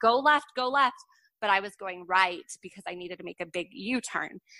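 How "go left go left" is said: acted-out high, yelled voice. Retelling calling to the kids on bikes crossing a street: retelling a yell. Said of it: "yelling it at them".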